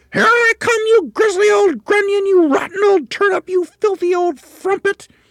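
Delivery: very high, very loud, shrill, full-voice shouting. A woman floating down over a man in the garden, calling at the top of her voice. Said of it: "she suddenly called up at the top of her voice".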